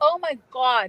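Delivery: natural New England accent slipping in. Praising an energy worker, New England accent. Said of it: "There's my New England accent coming in".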